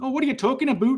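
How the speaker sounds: Ontario Canadian accent. Showing the typical Canadian accent people think of: Ontario Canadian accent. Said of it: "the typical Canadian accent you think of is, like, Ontario".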